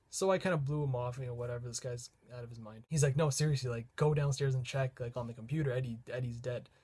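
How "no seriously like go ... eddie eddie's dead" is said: normal talking voice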